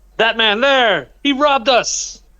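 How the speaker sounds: high-pitched, accusing, called out loudly. Accusing a thug in the street of stealing a bracelet: shouting an accusation. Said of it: "You are shouting this and pointing at them?".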